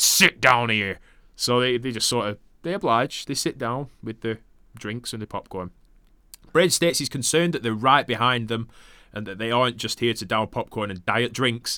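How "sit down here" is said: put-on aggressive tone, much slower. Retelling how a man checked two people's tickets, mock-aggressive tone. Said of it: "he's very aggressive in his tone".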